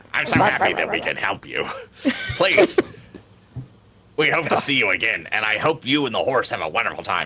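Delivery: different voice. Speaking in character after a bonding, in a changed voice. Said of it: "Why did you change your voice?".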